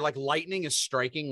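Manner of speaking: usual speaking voice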